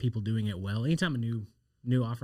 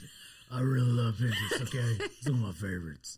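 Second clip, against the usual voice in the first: exaggerated, overdone, deep macho he-man voice. After being told his pinterest voice was feminine, redoing it in an exaggerated deep manly voice. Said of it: "Was that better?".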